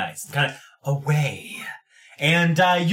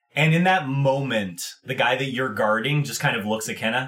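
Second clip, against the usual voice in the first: usual speaking voice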